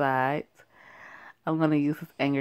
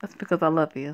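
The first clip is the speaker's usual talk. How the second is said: plain reading voice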